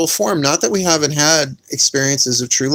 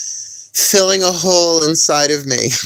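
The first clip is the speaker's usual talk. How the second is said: slow, drawn-out speech with laughter through words; 2 semitones higher than usual. Finishing a serious point that has turned funny: laughing while talking. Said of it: "I can't not say this without laughing now".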